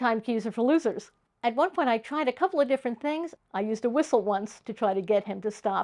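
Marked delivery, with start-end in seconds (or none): none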